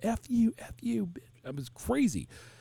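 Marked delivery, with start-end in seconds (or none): 0.0-1.2 mock child's shrill, very high-pitched yelling. Retelling how a freshman yelled at his mom; imitating a kid yelling. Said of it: "he's yelling to his mom".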